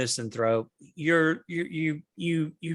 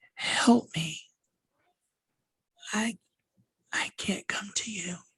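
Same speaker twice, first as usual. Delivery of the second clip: faint little whisper, sounding far away; 6 semitones higher, 4 dB quieter than usual. The narrator voices a figure the listeners hear calling out, in a very tiny voice. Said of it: "you hear a very tiny voice say".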